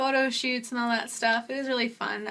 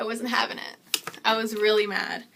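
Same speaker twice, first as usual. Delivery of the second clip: normal talking voice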